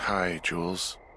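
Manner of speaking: drowsy, tired, just-woken voice. Woken up to answer the radio, greeting the caller; tired, sleepy voice. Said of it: "you sound tired".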